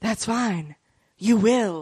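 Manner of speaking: mimicked, odd-sounding put-on whisper. Retelling what a man said in reply, imitating his weird whisper voice. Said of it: "In his weird whisper voice".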